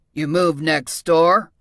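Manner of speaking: rough, gruff voice. Narrator reads the unseen neighbor's reply to newcomer Mia in a gruff voice. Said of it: "a gruff voice asked".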